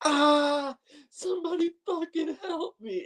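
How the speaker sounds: acted, very high, desperate, pained scream. Retelling how a man pinned between rocks cried out, imitating him screaming. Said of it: "he screams".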